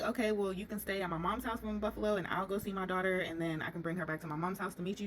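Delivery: ordinary delivery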